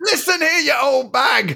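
raspy, creaky, rough, high-pitched yell. In an acted argument, a character rounds on an old lady, shouting. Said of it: "Don't shout at me".

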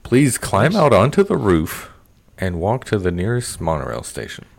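sing-song theme-park monorail announcer voice. Imitating a monorail safety announcement, in a monorail announcer voice. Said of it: "That actually sounded like the guy from about 20 years ago".

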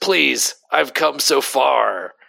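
character voice, slow, drawn out, rough and creaky. Reading a comic panel aloud as Blackheart pleading: Blackheart voice. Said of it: "That's the Blackheart voice".

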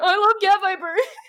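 words pushed out through tears. Speaker retells meeting Cab Viper at a booth and sobbing; retelling crying through tears. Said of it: "through tears".

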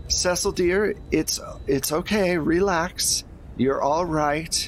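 put-on woman's voice. Describing what you hear on one side, doing a woman's voice. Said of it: "you hear in a woman's voice".

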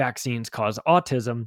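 ordinary delivery

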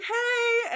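very high-pitched, loud, squeaky starstruck voice.

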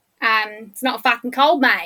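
put-on exaggerated Australian accent. Showing how Australians would phrase it, in an exaggerated Australian accent. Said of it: "How do the Aussies say it?".

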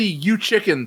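ordinary talk

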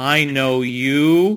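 loud, accusatory tone with a long, stretched "you". Retelling a stranger on the bus recognizing him: accusatory tone. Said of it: "like, accusatory".

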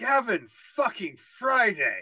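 put-on yell. Speaker retells spotting a man backstage at a show, retelling a yell. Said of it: "I just yelled".

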